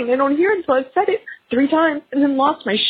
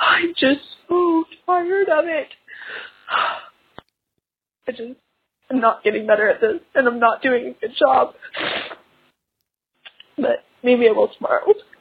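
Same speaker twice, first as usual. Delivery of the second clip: tearful speaking, much lower pitch; 3 semitones lower than usual. Speaking on a show, crying while talking. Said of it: "I am incapable of talking about any feeling at all without crying".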